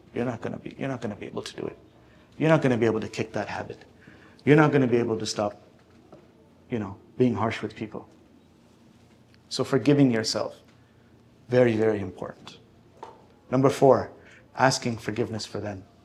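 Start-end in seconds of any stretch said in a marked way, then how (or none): 0.1-8.0 low, insistent, tempting half-whisper. Voicing Shaitan nudging someone at a threshold: Shaitan half-whispering. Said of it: "the whispers are there".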